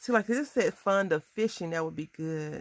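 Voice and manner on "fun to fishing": plain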